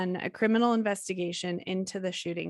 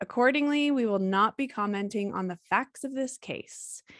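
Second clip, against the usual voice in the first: ordinary talk, nothing marked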